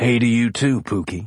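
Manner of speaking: sleep-roughened, gravelly growl. Just out of a dream, a man answers the woman smiling down at him in a deep, gravelly growl. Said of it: "he growled. The night's sleep left his voice deep and gravelly".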